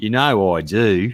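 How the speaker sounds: put-on Australian accent, dropped low. Asked to say the line with an accent, an attempted Australian accent. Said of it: "Australian accent?".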